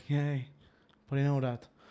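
mock, all-seductive, flirty come-on tone. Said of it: "The cop is like, all seducely".

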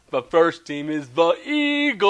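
ordinary talk, nothing marked

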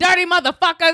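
acted yelling. Retelling yelling out the window at litterers: imitating own yelling. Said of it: "I yell out my window".

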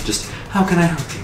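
breathy airy voice. A game narrator voices a high elf sitting behind a desk, airy elf voice. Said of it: "Like in a voice like air".

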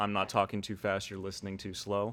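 normal talking voice

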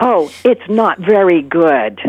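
very slow, loud, carrying, drawn-out stage whisper. Retelling a woman answering her phone during a quiet play: imitating a loud whisper. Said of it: "she's whispering really loudly".

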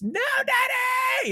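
very high, drawn-out, acted top-of-lungs shriek. Retelling how she screamed from the hallway: imitating someone screaming at the top of her lungs. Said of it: "just screaming at the top of her lungs".

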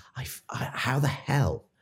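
very slow, acted whisper breaking into tears. Retelling own reaction to a stranger's answer: retelling bursting into tears. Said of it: "I just burst into tears and went".

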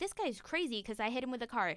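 ordinary talk, nothing marked

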